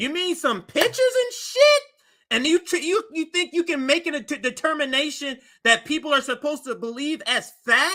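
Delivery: voice shooting very high in outrage. Speaker questions a claim based on publicly available evidence, in a high-pitched outraged voice. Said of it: "Got me out here using my high voice".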